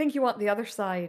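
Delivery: dismissive, condescending tone. Voicing a shopkeeper who leans back as customers approach: dismissive shopkeeper. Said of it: "seems to almost immediately dismiss you".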